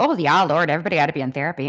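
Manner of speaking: put-on, over-the-top Midwestern accent. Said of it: "I sounded super Minnesotan just there".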